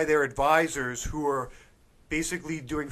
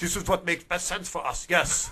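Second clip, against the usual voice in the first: worst, bad fake put-on Russian accent; 3 semitones higher than usual. Speaker voicing a hypothetical foreigner's reasoning, in worst Russian or Chinese accent. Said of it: "in like your worst Russian accent or Chinese accent".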